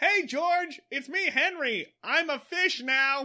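play-acted high-pitched yelling, calling out. Recounting a scene from a story, the speaker is imitating Henry yelling. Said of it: "just Henry yelling".

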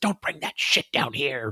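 very angry, tonal, whispery voice. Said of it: "the E V P he gets is very angry. It's whispery".

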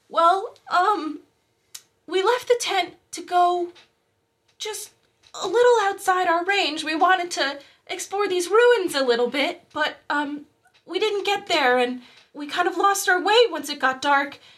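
very high-pitched voice, sobbing and crying through the words. Asked where her father went, a young woman answers, crying while speaking. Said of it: "and on the ground you see a petite young woman with mousy brown hair in beige clothes knelt on the ground, / and on the ground you see a petite young woman with mousy brown hair in beige clothes knelt".

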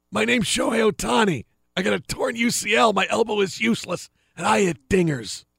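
tough-guy mafia movie henchman voice. Imitating Shohei Ohtani as a henchman from a mafia movie: mafia henchman voice. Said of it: "I sound like I'm one of those guys in a mafia movie".

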